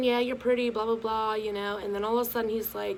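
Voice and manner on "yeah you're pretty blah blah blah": ordinary delivery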